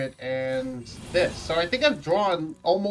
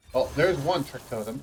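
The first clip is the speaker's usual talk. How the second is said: ordinary talk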